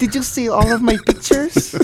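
very high-pitched Filipino grandmother accent. Mocking someone showing off their pictures, in a Filipino grandma accent. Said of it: "Why do I sound like a Filipino grandma?".

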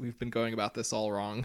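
utterly unmoved, stoic, deadpan delivery. Retelling a kid's line after being exploded: imitating a stoic delivery. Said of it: "very stoically says".

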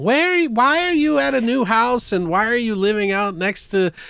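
very high-pitched nagging voice. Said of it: "she's like".

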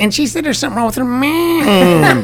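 mock Cleveland accent.

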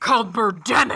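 put-on heavy-metal style voice. Telling the history of adaptations of The Birds; metal voice. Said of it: "That was my metal voice".

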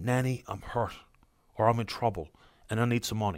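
put-on tortured, pained, hushed half-whisper. Warning about phone scammers posing as a grandchild: imitating a half-whispered, tortured voice. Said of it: "in the whispered, tortured voice".

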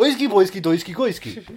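put-on Swedish-sounding nonsense babble. Actor describing voicing another Muppet, in a Swedish Chef voice. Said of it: "he's doing a Swedish accent".

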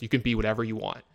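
mimicked flat deadpan delivery. Retelling a superhero movie scene where a woman answers a little girl, retelling a deadpan reply. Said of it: "looks at her in deadpan and just goes".

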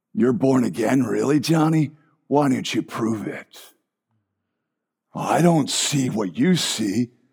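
very deep, low, eerie, spooky demonic devil voice. Speaker voices the distracting voice that questions someone born again, spooky demonic voice. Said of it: "I'm spooking myself out".

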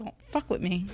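mock-angry put-on cat voice. Speaking for a pet cat that is mad: voicing an angry cat. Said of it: "Tail's all pissed off. She's like".

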